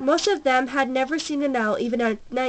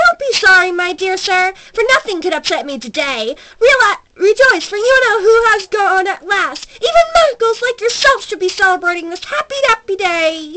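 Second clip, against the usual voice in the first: put-on very loud, high, squeaky old man voice; 7 semitones higher, 10 dB louder than usual. Reading an old man's words to a man he nearly knocked down: squeaky voice. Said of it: "said in a squeaky voice that made passers by stare".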